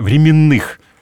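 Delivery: временных stressed on the second syllable.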